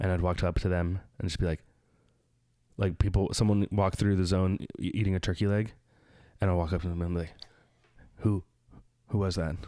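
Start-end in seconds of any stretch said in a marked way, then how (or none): 8.2-9.6 low, quiet, intense voice. Retelling walking up to a person in the scare zone: imitating own low intense voice. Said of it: "I'll just talk to them like this, like, very, like, kind of, like, just low".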